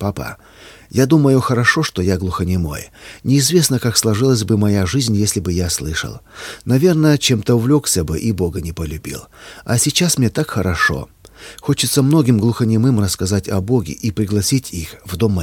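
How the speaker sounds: ordinary delivery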